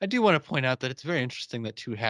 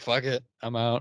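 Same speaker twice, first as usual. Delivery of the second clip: ordinary talk, nothing marked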